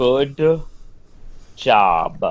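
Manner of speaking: mock praising tone. Teasing another speaker for a vague game title answer: sarcastic. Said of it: "End sarcasm here".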